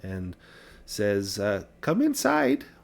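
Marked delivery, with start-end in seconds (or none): 1.8-2.6 put-on kindly old lady voice, higher. Voicing an old woman inviting players inside: sweet little old woman voice. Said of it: "a sweet little old woman".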